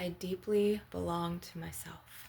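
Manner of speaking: ordinary talk, nothing marked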